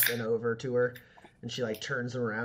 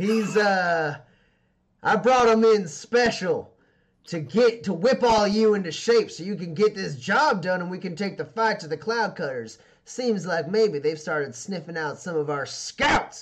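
very loud shout at high pitch; 7 semitones higher, 8 dB louder than usual. Voicing a character introducing Roman to everyone in the cavern: shouting to a crowd. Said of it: "she shouts to the cavern as a whole".

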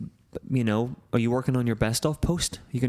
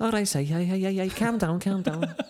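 put-on high-pitched Liverpool accent; 7 semitones higher than usual. Imitating the Liverpool guys sketch: Harry Enfield Scousers impression. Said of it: "That's Harry Enfield, isn't it?".

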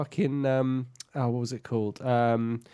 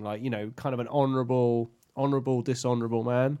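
normal talking voice

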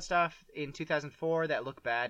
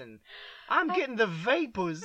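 put-on high, loud, swooning Southern belle voice; 8 semitones higher, 4 dB louder than usual. Imagining a woman fanning herself, in a mock southern debutante voice. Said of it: "fanning herself like a southern debutante".

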